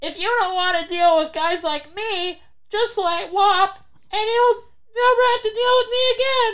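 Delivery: held-nose nasal voice, very high. Retelling what a man said while holding his nose, in a holding-your-nose voice. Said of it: "that's the perfect voice".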